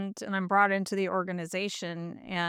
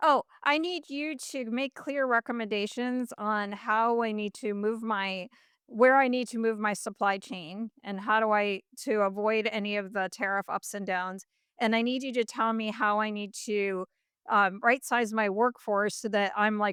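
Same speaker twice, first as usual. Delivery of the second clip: ordinary talk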